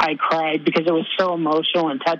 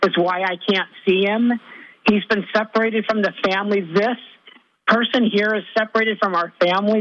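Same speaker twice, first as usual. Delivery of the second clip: distressed, upset, worked-up, agitated voice; 4 semitones higher than usual. Retelling what he said while grabbing the speaker's face: imitating someone loud and upset. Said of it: "he was really loud and he was really upset".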